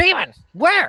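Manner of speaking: very shrill, high, loud shrieked goblin voice. Voicing goblins who shriek at the word demon: shrieking goblins. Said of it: "the goblins all kinda shriek and go".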